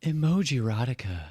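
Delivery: put-on female voice. Pitching a spoken intro for the new segment: put-on female voice. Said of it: "a female voice being like".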